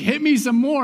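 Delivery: put-on high pleading through wild hysterical laughter. Retelling a Batman interrogation scene: Joker laughing hysterically. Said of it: "And he's laughing hysterically".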